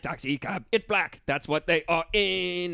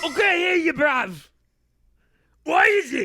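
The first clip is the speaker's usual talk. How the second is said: put-on Cockney accent, very high and loud; 11 semitones higher, 6 dB louder than usual. Acting out a scene set in london, speak in a cockney accent. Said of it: "why is it all Cockney?".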